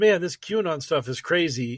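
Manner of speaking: ordinary talk, nothing marked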